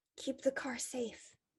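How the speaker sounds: softly whispered. Telling how someone hugged the listener before leaving, the speaker is retelling a whisper. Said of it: "he whispers".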